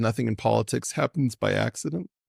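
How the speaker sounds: plain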